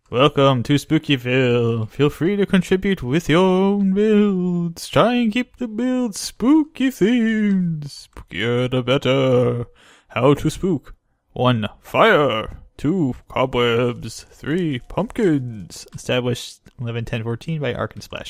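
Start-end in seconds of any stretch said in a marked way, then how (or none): 0.1-15.8 silly, goofy put-on reading voice. Reading out the spookyville welcome sign, in a goofy voice. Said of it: "goofy voice aside".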